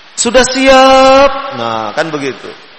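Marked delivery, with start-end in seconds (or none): 0.2-1.3 loud, high, with final syllable of siap stretched. Imitating how kindergarten teachers talk, with drawn-out word endings. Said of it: "kalau guru TK biasanya belakangnya panjang-panjang".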